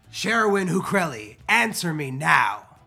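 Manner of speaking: voice booming out. A tabletop character steps outside the booth and cries out to someone, booming voice. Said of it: "using my thaumaturgy and booming my voice, I cry out".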